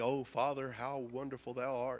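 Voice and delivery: put-on lofty, grand, old-fashioned solemn voice. Imitating people who pray eloquently in public: imitating eloquent King James-style prayer. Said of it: "like they're writing the King James Version when they pray".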